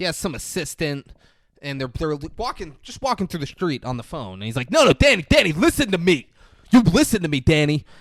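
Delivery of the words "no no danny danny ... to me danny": very loud, high-pitched yelling. Retelling a movie scene of yelling at someone on the phone: imitating Colin Farrell yelling. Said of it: "he's yelling at someone on the phone".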